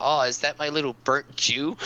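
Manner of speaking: usual speaking voice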